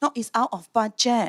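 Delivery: put-on Singaporean accent. Retelling her reply while he shops for a guitar, in a Singaporean accent. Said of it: "that was really good Singaporean accent".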